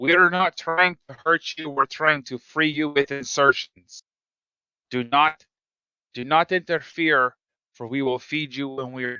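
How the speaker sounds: shouting loudly. A player voicing his character calling out to the people, yelling out to a crowd. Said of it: "Going to yell out to the people".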